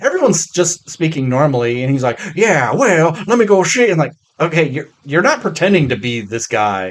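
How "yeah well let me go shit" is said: put-on old-timey voice, pitched a touch high. Describing an actor's performance in a film, Nicolas Cage old-timey voice. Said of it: "his like old timey voice".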